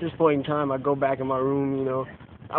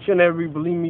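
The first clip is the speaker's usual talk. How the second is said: usual speaking voice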